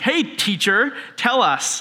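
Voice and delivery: slow, mocking, super condescending tone. Explaining a Bible passage, act out the scholar testing the teacher, super condescending. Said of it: "he's using teacher like super condescendingly".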